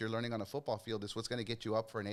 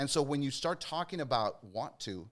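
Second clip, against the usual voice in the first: ordinary delivery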